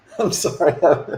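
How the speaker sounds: words broken up by chuckling laughter. Apologizing to a customer after being told to read the room: laughing while talking. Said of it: "I shouldn't be laughing".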